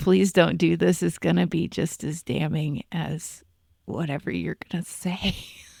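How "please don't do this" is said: put-on whispering. Criticizing a woman everyone could still see, quoting her: imitating a whisper. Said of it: "Seeing you whisper".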